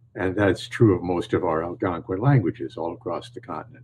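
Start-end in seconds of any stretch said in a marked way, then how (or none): none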